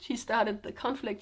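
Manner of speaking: usual speaking voice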